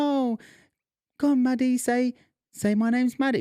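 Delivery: put-on very high-pitched, coaxing baby talk. Retelling coaxing a small child to say her name: imitating talking to a small child. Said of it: "you know how you talk 'cause there's a baby involved".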